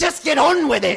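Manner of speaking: shouted at full force, a very loud yell. A narrator reads a female character answering Betrasa, yelling. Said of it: "she yelled".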